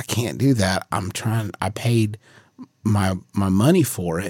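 ordinary delivery

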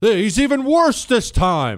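high, loud, squealing, scandalized mock outrage.

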